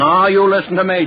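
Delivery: ordinary delivery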